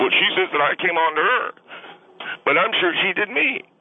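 high-pitched tearful crying, words choked out. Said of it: "What, are you crying?".

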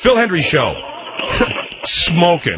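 snide, mocking, sarcastic read. Told on the radio to do it sarcastic, says it sarcastically. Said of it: "Now do it sarcastic".

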